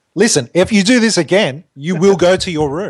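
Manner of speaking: put-on politician yelling. Retelling how Obama yells at America: imitating Obama yelling. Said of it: "he yells at them and he says".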